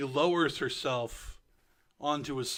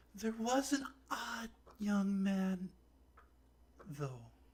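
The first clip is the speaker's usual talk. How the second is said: put-on high, aged little old lady voice; 7 semitones higher, 4 dB quieter than usual. Questioned by adventurers about Anna, a very old woman answers. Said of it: "As you debate being evil to this old woman, this old, old, old / As you debate being evil to this old woman, ... She's so doubled over and just like she can barely get her own hand above her head. / A".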